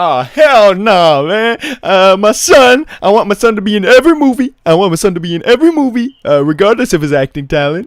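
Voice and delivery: very loud, high-pitched celebrity-style voice. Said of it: "Do a [name] impression".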